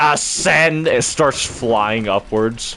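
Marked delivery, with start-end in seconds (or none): 0.0-0.9 high, robotic, machine-like monster voice. Retelling a Dalek stuck at the stairs taking off, in a Dalek voice. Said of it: "And then it just goes".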